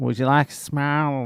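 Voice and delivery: rough Boston accent attempt. Quoting the lady at a pizzeria: attempted Boston accent. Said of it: "she said it in that boss".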